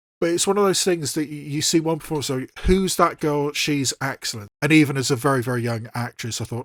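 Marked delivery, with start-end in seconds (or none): none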